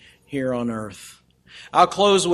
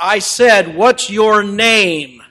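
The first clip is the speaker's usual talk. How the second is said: raised voice with one word drawn out; 5 semitones higher, 6 dB louder than usual. Retelling how a general repeated his question to a mumbling young man: a little louder voice. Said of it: "said in a little louder voice".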